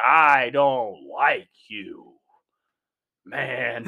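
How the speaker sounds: loud, very slow, angry delivery. Mocking an old movie actor's acting in a break room: imitating John Wayne angry. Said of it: "He's like".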